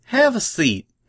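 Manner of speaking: warm, friendly tone with very high pitch. Applebloom speaks to Silver Spoon as she joins the fillies, warmly. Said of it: "Applebloom said warmly".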